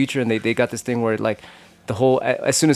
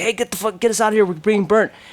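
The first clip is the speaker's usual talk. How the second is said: shrieking cry, very high screaming; 10 semitones higher than usual. Retelling a story of people burned alive, imitating people screaming. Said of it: "they're screaming like".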